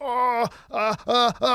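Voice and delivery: mock freaked-out panicky stammering, slow and very drawn out. Retelling a near-fall, mimicking a companion: imitating Swanson freaking out. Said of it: "Swanson's freaking out like".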